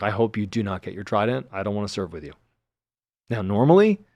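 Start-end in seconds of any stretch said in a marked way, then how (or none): 0.0-2.3 mock stern, severe tone. Retelling what the instructor told the whole class: imitating a stern scolding. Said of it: "a stern talking to in front of my whole class".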